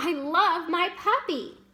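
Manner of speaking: very slow excited speech. Showing how an exclamation point sounds, with excited, emotional delivery. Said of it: "you can hear that emotion in my voice, the excitement".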